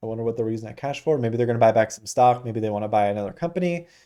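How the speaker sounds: too fast, rattled-off musing delivery.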